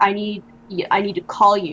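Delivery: ordinary talk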